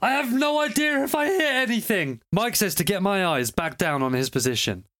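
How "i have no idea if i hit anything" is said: acted-out yell, pitched very high. Recounting firing through a scope, retelling their own yell. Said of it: "and I yelled".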